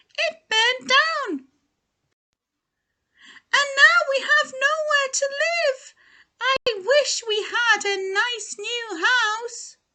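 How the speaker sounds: tiny, very high-pitched squeaking mouse voice. Narrator reads the mother mouse's reply to George in a story: squeaky mother-mouse voice. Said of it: "squeaked the mother mouse".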